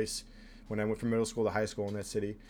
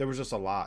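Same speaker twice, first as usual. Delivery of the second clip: ordinary delivery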